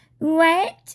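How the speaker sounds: put-on high Valley Girl voice, "what". Retelling someone's smiling reply on a FaceTime call, Valley Girl voice. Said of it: "With a smile on her face with that Valley Girl voice".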